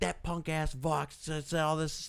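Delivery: mock worked-up, high, screaming rant. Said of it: "is screaming at him".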